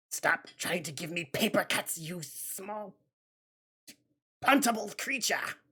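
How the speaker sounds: strained put-on voice. A speaker retells his words to a small creature, strained put-on voice. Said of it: "Getting into this voice is so hard because I don't want to like pull my vocal cords".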